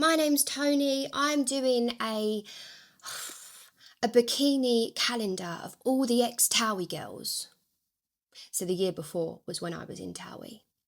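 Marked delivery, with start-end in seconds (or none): 0.0-7.5 pushy, brash, bolshy, boisterous, drawn-out voice. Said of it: "this real bolshy, boisterous voice".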